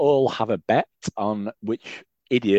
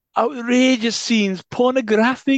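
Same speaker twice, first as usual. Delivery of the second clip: very high voice slipping into a Welsh accent; 13 semitones higher, 3 dB louder than usual. Speaker echoes the other speaker's words, slipping into a welsh accent. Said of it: "I have gone Welsh there".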